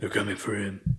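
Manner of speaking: growled, changed-timbre voice. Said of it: "does the Batman voice".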